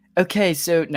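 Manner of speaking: poor fake British accent. Asked to present the next points in a British accent, trying a horrible British accent. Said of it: "that was a horrible British accent too".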